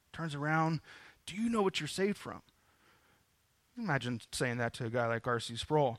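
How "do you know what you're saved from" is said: eager, fast, excited blurting. Retelling how a student ran up to the preacher: imitating an excited student. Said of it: "really excited".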